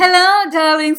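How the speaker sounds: very loud, high-pitched British devil voice. The speaker hands the talk over to Lucifer Morningstar, Lucifer Morningstar voice. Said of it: "now with Lucifer Morningstar will talk from now on".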